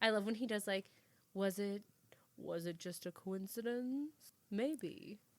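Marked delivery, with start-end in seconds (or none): 1.3-5.2 slow, mysterious narration lingering on each word. Quoting what the Dateline host says: Keith Morrison voice. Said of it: "I'm trying to do his voice".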